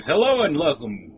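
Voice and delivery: put-on DJ-style radio announcer voice. Told to just use a radio voice, opening with a radio announcer voice. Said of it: "just use your radio voice".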